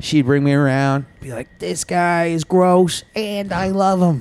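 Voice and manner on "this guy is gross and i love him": put-on voice with a Yiddish-inflected accent.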